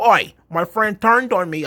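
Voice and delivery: put-on Australian accent, pitched high. Describing Tegan Knox's TV storyline, imitating her Australian accent. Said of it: "She's from Australia".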